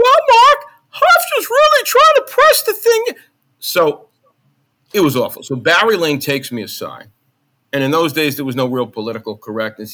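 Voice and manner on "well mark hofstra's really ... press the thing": put-on very loud, very high falsetto, heavy New York accent. Recalling his early sports calls, the speaker mimics his past self: falsetto with heavy new york accent. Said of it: "in this falsetto voice. It was almost comedic with this heavy New York accent".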